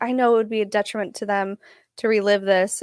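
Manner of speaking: quavering, wobbly, shaky, trembling voice. Retelling what a woman said, imitating a shaky voice. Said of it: "and her voice is all shaky".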